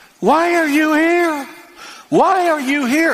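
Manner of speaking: put-on high screaming with repeated words. Retelling how a woman at a hotel desk screamed at him: imitating a woman screaming. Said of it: "started screaming".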